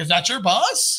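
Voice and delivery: normal talking voice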